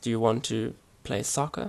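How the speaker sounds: ordinary talk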